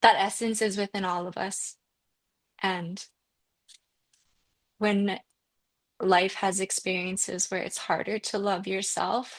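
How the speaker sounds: voice choked up with emotion. Speaking about spirituality and self-love, getting emotional. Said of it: "I'm getting emotional".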